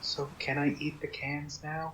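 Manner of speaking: barely audible, very hushed whisper. Voicing a character who leans over to another: hushed whisper. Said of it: "in a very hushed whisper".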